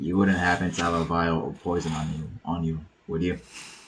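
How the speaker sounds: utterly grave, solemn, hushed, dead-serious voice. Player's character looks someone in the eye and asks a question; most serious tone ever. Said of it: "I'd say in the most serious tone ever".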